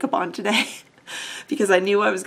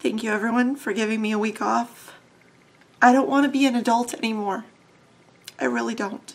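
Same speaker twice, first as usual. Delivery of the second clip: tearful, weeping speech, crying through the words. Thanking viewers for a week off, crying. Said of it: "so I can stop crying".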